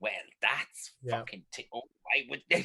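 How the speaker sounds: put-on little old Irish lady voice. Imagining little old ladies around Ireland in their armchairs reacting, little old Irish lady voice. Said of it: "little old ladies around Ireland that would be sitting in their armchairs going".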